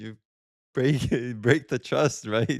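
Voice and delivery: laughing through the words while talking. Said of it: "I don't know why I'm laughing".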